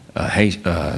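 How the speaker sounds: plain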